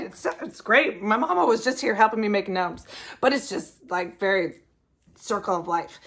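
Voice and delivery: tearful, crying through the words. Showing viewers a favorite ornament from freshman year, crying. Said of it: "I don't know why I'm crying".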